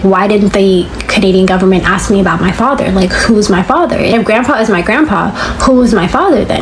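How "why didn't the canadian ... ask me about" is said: usual speaking voice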